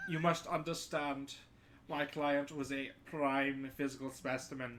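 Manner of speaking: English spoken with put-on German accent. Speaking in character about his client, german accent. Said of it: "I will speak with a German accent".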